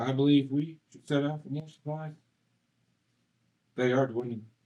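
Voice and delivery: voice sounding piped over a radio. Suggesting the group set out for supplies: sounding like through a radio. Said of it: "Why do you sound like you're coming through a radio".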